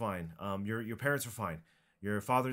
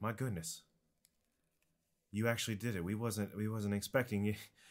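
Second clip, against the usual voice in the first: usual speaking voice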